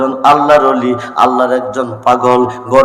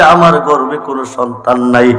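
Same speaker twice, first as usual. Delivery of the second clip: ordinary talk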